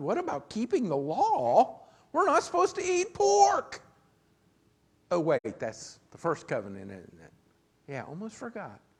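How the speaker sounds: heavy put-on sarcasm, swooping sing-song. Commenting on a bible verse about eating pork: sarcastic. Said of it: "That was some sarcasm there".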